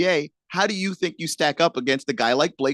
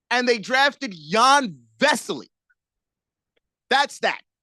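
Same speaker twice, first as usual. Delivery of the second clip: fed-up, angry, high-pitched complaining tone; 7 semitones higher than usual. Retelling a draft story to listeners and getting worked up: mad. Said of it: "I think I just made myself mad".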